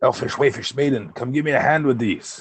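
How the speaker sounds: whisper-yell, called out across. Player crouched by the crates calls over to the maiden, whisper-yelling. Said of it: "And I'll kind of whisper, yell".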